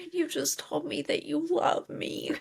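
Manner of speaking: high, creepy, eerie, mocking psycho whisper.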